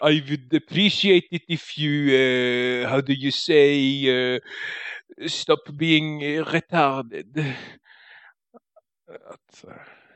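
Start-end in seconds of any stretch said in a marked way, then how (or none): 0.1-7.5 put-on French accent. Offering to try it, the speaker answers in English: French accent. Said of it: "med något av en fransk accent".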